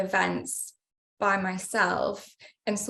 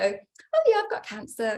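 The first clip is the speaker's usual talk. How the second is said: offhand, breezy, sing-song, flippant throwaway tone; 2 semitones higher than usual. Recalling personal trial and error, acting out an old line: acting flippant and offhand. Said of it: "see if I could almost say it flippantly".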